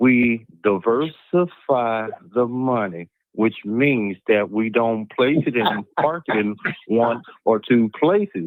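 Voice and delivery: slow, careful, deliberate delivery, word by word. Speaker repeating an explanation one more time, speaking slowly. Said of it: "I'm going to say it slowly this time".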